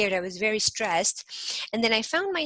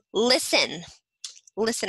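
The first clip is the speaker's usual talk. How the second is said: each "listen" strongly emphasized. Demonstrating spoken emphasis, the speaker stresses the word listen. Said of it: "I'm putting very much attention on the word listen".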